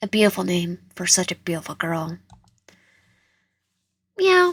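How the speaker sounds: playful put-on cat voice meowing. Playing a cat speaking to its new companion, in a cat voice. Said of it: "I just like to do the cat voice".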